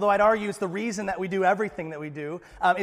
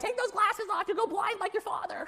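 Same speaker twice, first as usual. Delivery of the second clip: very high-pitched, shrill, scolding yell; 13 semitones higher, 6 dB quieter than usual. Retelling a childhood memory of trying on dad's glasses: imitating mom yelling. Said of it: "My mom's yelling at me".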